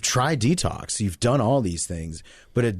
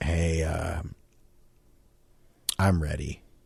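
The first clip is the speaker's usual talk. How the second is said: imitated broken voice, lower pitch; 4 semitones lower, 4 dB quieter than usual. Retelling finally calling family, ready to give in: imitating own broken voice. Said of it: "your whole demeanor changed when you just said it like that".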